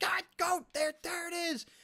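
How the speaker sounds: very high-pitched, drawn-out scream. Imagining chat screaming at their screen: imitating viewers screaming. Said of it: "they're just screaming at their screen".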